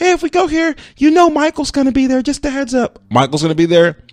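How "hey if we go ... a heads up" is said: bad put-on voice pitched very high. Imagining the current partner's warning before going out: terrible impression of current partner. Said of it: "this is a terrible impression".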